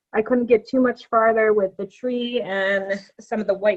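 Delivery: ordinary talk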